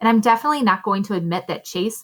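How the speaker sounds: plain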